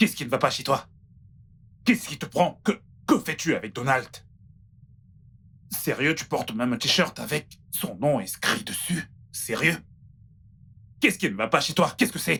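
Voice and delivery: indignant, angry, heated scolding rant. A character confronts Ken, shouting angrily. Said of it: "pourquoi tu cries?".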